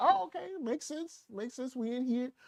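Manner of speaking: high, soft mock casual shrug. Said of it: "He was like".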